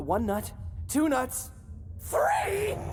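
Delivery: high-pitched screaming. Counting off his eyes and body parts aloud, screaming. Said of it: "I probably shouldn't have screamed that".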